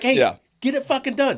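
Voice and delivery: mock shrill, high-pitched, angry, demanding yell. Acting out an order given at home: imitating someone yelling. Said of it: "Why are you yelling at me?".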